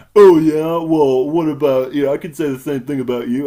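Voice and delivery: put-on loud, snooty, condescending, talking-down tone. Retelling a character's retort in a movie scene: imitating condescending tone. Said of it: "in just the most condescending way".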